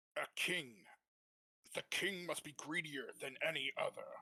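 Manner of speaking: strong voice supported from the diaphragm. Reading a line after being asked for good posture: speaking from the diaphragm. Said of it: "try that first sentence for me".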